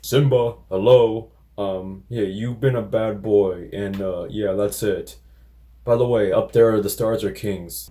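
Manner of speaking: play-acted listless, bored, unbothered, going-through-the-motions tone. Mocking the new film's flat delivery: bored Mufasa impression. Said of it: "James Earl Jones sounded so bored".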